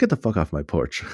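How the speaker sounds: hostile, angry voice. Retelling a movie scene at a front door: imitating an angry mom. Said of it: "the angry mom goes".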